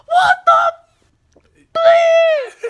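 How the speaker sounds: very loud, shrill, high furious yell. Retelling a husband's angry outburst at the texting driver: imitating an angry shout. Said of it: "He got so pissed".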